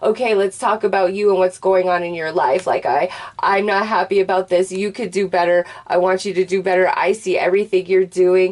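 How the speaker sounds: ordinary talk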